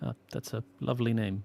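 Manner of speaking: normal talking voice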